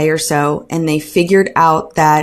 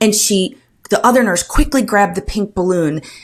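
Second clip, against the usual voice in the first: normal talking voice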